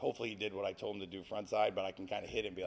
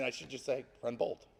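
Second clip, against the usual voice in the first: ordinary talk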